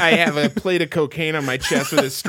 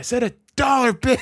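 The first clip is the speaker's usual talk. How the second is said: high-pitched man's voice; 8 semitones higher than usual. Retelling a Scary Movie scene with a homeless guy: imitating a homeless guy from Scary Movie.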